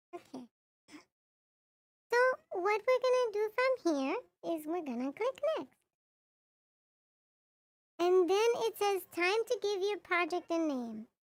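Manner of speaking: cutesy, high-pitched kawaii-style voice. Streamer walks viewers through naming a project, in the kawaii pitched voice a viewer redeemed. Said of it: "Itzel has redeemed kawaii pitched voice".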